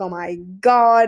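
bawling, sobbing, tearful outburst. Retelling seeing the baby touch Pedro Pascal's face, retelling bawling and crying. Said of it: "And I'm bawling and bawling and crying".

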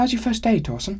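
very high, lively, spry, sprightly voice. A dwarf woman greets a newcomer on their first day, in a sprightly voice. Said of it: "She asked in a sprightly voice".

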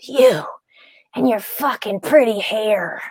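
storybook wicked witch delivery. Retelling what a woman said looking up at her, in a Wicked Witch of the West voice. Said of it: "You sounded like the Wicked Witch from the West".

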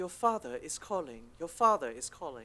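put-on upper-class, posh British accent. Describing their phone's ringtone, quoting it in a posh british accent. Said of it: "posh British accent".

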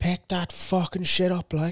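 put-on shouting. Telling a story, the speaker acts out a stranger shouting at a dog owner: imitating someone shouting. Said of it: "started shouting like".

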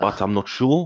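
put-on South African accent. Asked for their best impression, trying a south african accent. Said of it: "I will talk like this".

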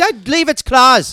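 imitated Irish accent. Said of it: "you're fucking dominating that accent".

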